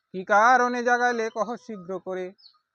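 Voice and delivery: loud, high, angry voice.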